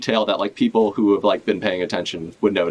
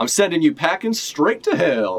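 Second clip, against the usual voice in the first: sudden, high, put-on Western cowboy accent; 7 semitones higher than usual. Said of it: "cowboy accent all of a sudden".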